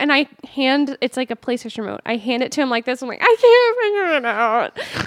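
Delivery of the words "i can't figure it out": very high, very slow, drawn-out words through laughter. Retelling handing a roommate the remote: imitating laughing while talking. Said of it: "And I'm laughing so hard".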